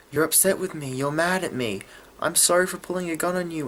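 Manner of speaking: mock crying, frantic, high and tearful. Retelling a show scene, quoting Lizzie apologizing: imitating Lizzie crying. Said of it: "she starts crying and freaking out".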